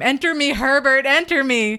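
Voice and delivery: put-on, full-on, shrill, loud screaming. Retelling how a woman calls her husband's spirit into her, retelling a scream. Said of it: "she starts to scream".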